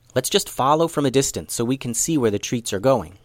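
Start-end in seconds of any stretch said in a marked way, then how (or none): none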